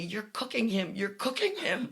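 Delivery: alarmed screaming cry, pitch climbing. Retelling a woman screaming about a baby wrapped in a blanket, imitating her screaming. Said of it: "she's screaming at me".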